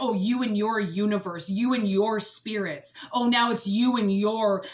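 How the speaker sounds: belittling, dismissive, condescending and mocking tone. Retelling what the father always said about spirits: imitating condescending father. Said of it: "it was so condescending".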